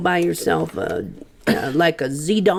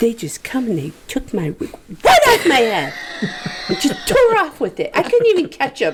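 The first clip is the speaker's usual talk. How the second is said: high, swooping put-on woman's voice; 8 semitones higher than usual. Retell, on request, what a woman said after a bird ripped her hair off, imitating her voice. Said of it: "say in the voice one more time".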